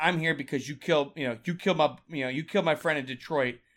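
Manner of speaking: put-on deadpan delivery. Describing a movie scene, acting out Eddie Murphy's line, deadpan Eddie Murphy impression.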